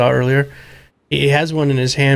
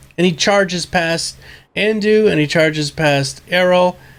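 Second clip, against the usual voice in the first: usual speaking voice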